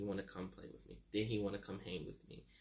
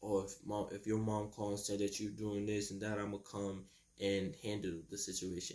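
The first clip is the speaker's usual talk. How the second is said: normal talking voice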